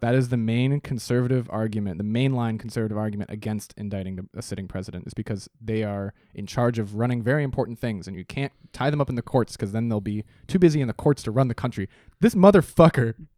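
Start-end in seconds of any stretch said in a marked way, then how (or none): 12.2-13.1 furious angry shout, higher and louder. Complaining that a sitting president is giving tours: yelling angrily. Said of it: "You're yelling".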